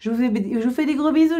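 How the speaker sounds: stumbling, fumbled start, tripping over first words. Closing a video to viewers, stumbling over words. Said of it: "Je bafouille".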